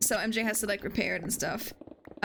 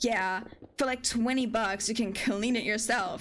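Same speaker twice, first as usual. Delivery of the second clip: mock snappy, curt, snapping-back tone. Retelling how a seller replied to a remark about dirt: imitating someone snapping. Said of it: "kinda snapped at me".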